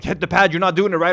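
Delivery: put-on pushy boxing-coach yell, toned down. Retelling a boxing coach yelling at them: imitating a coach yelling. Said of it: "yelling at me, like".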